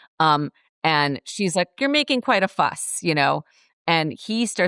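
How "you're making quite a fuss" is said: put-on, very high-pitched yell. Retelling the same film scene, imitating Dorothy yelling at the lion. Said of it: "Dorothy's sort of yelling at him".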